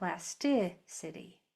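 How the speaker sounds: tic in plasticity said stronger. Explaining word stress, saying plasticity with the stress on 'tic'. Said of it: "usually the third syllable from the end is accented. That means this part is said stronger".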